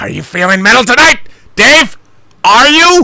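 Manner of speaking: very high, loud screaming, overmodulated into mic. Asking another speaker if he is feeling metal tonight: screaming into the mic. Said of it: "I was screaming into the mic".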